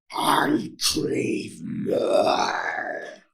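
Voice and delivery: full-on rough, creaky growling monster voice. Recreating a line from a past session, in full-on monster voice. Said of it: "I did like a full-on monster voice for that".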